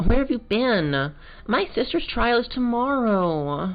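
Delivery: put-on very high, sing-song, swooping valley girl drawl. Voicing a scientist character in a scene: valley girl voice. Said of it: "my voice for this girl initially was that of like a kind of like a valley girl".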